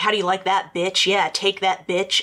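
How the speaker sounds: normal talking voice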